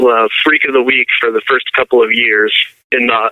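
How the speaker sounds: ordinary delivery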